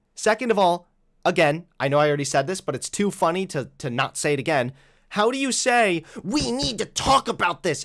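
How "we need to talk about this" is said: most shrill, high-pitched voice imaginable. Mocking people who say this right after telling someone to shut up, shrill Karen voice. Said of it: "in the most shrill Karen voice imaginable".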